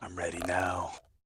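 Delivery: soft, quiet whisper. Voicing a character just after drinking an invisibility potion: soft whisper. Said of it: "I just softly whisper".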